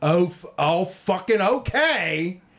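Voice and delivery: annoyed, resentful, begrudging and mad tone. Recounting a woman told to put her mask on while shopping: imitating someone mad. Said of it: "like all mad about it".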